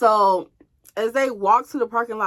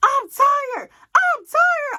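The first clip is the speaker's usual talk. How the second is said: furious shouting, very high pitched; 3 dB louder than usual. Telling listeners how she got mad and yelled at him: retelling own angry yelling. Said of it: "I got mad and I just started yelling".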